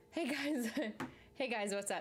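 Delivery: out of breath. Greeting viewers after running over to the camera, out of breath. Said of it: "I'm like out of breath because I like ran over here".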